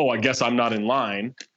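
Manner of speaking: super passive-aggressive, slow Minnesota-sounding delivery. Retelling a stranger's remark in a pharmacy line: imitating a passive aggressive remark. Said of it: "he starts doing this super passive aggressive".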